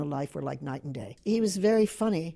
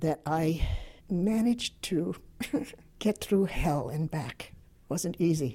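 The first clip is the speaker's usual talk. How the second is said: tearful, breaking voice, crying through the words; 3 dB quieter than usual. An interviewee answers what they are most proud of, crying, voice breaking. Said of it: "I don't know why I'm crying".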